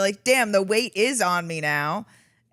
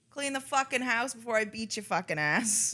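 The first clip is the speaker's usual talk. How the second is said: put-on bossy, domineering yelling voice; 2 semitones higher, 9 dB quieter than usual. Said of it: "She'll be like".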